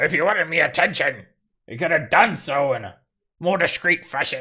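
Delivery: grumpy, grouchy voice. Voicing a gold dwarf who stomps out at the noise: grumpy voice. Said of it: "Suddenly you hear this grumpy voice".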